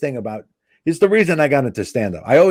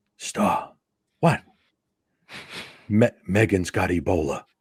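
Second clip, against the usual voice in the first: hushed, slow whisper with words dragged out; 5 semitones lower, 5 dB quieter than usual. Retelling a friend's 3:30 a.m. phone call: imitating a friend whispering. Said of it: "he's whispering".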